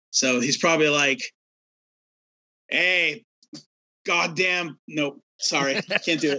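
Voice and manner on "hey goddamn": bad, weak attempt at a Boston accent. Guessing what a man would say, admitting they can't do it: bad Boston accent. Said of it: "I can't really do a Boston accent".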